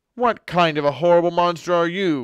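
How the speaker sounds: loud, high, furious dragon shouting. The dragon rises up through the waves, shouting at Monkey. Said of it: "He shouted at Monkey".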